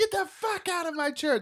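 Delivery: mock very high, shrill screaming yell. Retelling a priest throwing someone out of confession: imitating someone yelling. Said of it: "He's, like, yelling".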